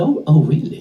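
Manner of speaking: put-on Australian accent. Retelling a first meeting in India, imitating Francis Brabazon's Aussie accent. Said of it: "And he's all Aussie accent".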